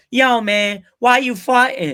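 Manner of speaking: put-on brash, loud, high-pitched Brooklyn boy accent. Imitating an ex-cop dad reacting to a fart, loud Brooklyn guy voice. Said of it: "Like really loud Brooklyn boy".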